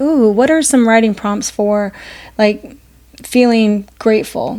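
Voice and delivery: ordinary talk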